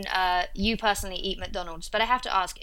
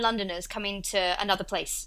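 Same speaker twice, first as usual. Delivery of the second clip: ordinary delivery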